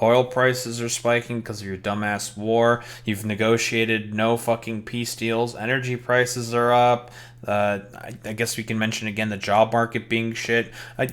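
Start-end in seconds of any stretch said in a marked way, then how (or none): none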